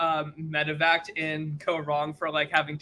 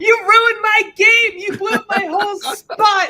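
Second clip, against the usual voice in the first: put-on shrill, very high, very loud furious rant; 10 dB louder than usual. Acting out a future rant at Q over losing Olive Garden: acting out an angry rant. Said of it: "you best believe I'd be going".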